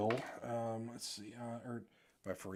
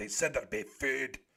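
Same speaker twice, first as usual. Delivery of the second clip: broad, thick Scottish brogue, heavily laid on. Retelling a Hobbit movie scene where Dwalin comes in: Dwalin's thick Scottish accent. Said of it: "In that real thick Scottish accent".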